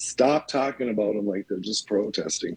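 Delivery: plain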